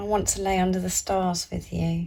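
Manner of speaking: ordinary talk, nothing marked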